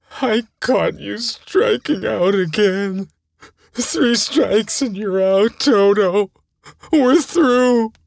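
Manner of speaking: high shriek through tears. The coach shuts the player out of their section with a tearful shriek. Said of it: "he shrieked with tears flowing".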